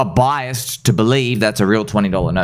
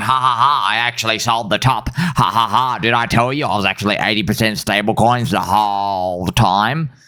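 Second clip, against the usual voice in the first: mocking, self-satisfied, smug gloating tone. Mocking bearish traders who bragged about selling the top: imitating gloating bearish traders.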